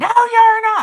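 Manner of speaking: piercing, shrill scream, very high pitched. Retelling how she refused the offer to pay; imitating her screaming. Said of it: "She started screaming".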